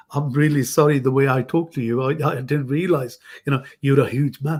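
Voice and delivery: ordinary talk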